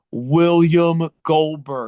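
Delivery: loud, pointed, emphatic delivery. Retelling a wrestler naming his rival straight to camera, pointedly. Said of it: "he looked at the camera square".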